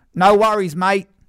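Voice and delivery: put-on Australian accent shout. Recounting shouting to an Australian neighbour walking away: retelling a shouted Neighbours-style accent. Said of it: "I shouted".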